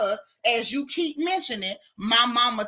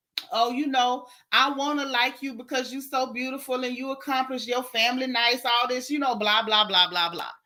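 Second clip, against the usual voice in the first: usual speaking voice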